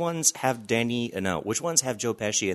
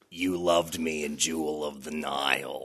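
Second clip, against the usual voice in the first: smoker-type voice, pitched lower; 5 semitones lower than usual. Discussing Leia's voice in the holiday special, one speaker answers: smoky Kathleen Turner impression. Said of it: "smoking 4 or 5 packs a day".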